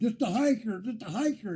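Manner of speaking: high, repeated, mock-urgent yelling. Retelling yelling from a tent as people on ATVs circle; retelling own yell. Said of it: "so I'm yelling".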